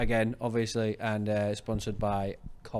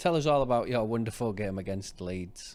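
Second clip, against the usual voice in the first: dry, mocking, sarcastic tone. Inviting another speaker to talk about the game they lost: sarcastic. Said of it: "quite sarcastically".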